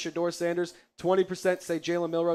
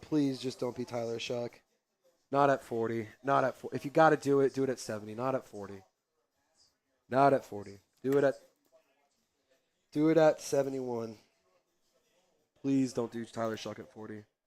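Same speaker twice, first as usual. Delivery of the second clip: anxious, nervous, repeated pleading babble; 6 semitones lower, 3 dB quieter than usual. Watching the draft pick at forty, begging it not to happen: nervous, pleading. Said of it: "I'm getting nervous here".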